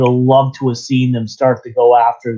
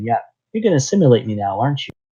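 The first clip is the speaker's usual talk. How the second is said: fast, innocent, blunt, matter-of-fact, guileless tone; 4 dB quieter than usual. Retelling a line from the episode: naive Elnor voice. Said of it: "his naive voice".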